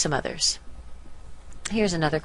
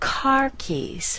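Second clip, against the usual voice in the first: CAR stressed and pitched high. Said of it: "So we want to stress car more than keys".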